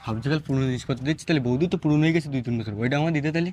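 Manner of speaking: very low, soft, cheeky delivery.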